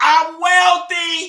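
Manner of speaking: very loud, high-pitched yell. Showing how loud she'll get before going quiet; shouting loudly. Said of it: "she gonna get real loud".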